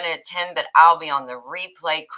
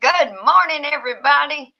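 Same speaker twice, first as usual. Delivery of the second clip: mock very high, excited shout; 11 semitones higher, 4 dB louder than usual. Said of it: "She's yelling it".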